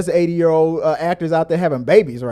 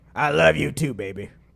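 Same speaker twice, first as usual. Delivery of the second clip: gruff, rough, angry-sounding voice. Imitating an elderly father who says loving things but sounds angry. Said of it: "it sounds angry".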